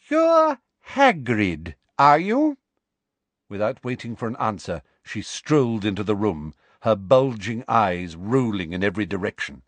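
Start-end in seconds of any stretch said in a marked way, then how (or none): 0.1-2.5 very high, slow, loud, over-enunciated speech. A woman addresses a man towering over her, slow and loud as if to the deaf. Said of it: "slowly and loudly, as though speaking to somebody deaf".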